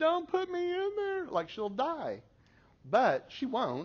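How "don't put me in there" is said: put-on very high, begging, pleading little child voice. Retelling a 2-year-old pleading not to be left at Sunday school, imitating a pleading toddler.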